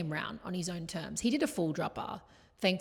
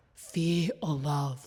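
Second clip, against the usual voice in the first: put-on, creepy cult leader voice; 4 dB louder than usual. Repeating her mantra during the trip: imitating her own creepy mantra. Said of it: "it actually was creepy".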